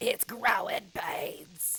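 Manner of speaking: shrill, very high, very loud voice. Retelling what the ex-wife says about the pains: imitating ex-wife's way of talking. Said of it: "she says it like this".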